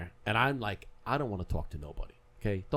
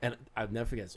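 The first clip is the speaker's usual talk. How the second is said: ordinary talk, nothing marked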